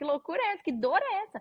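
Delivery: put-on very high, shrieking yelp of pain. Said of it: "eu gritei, assim, tipo".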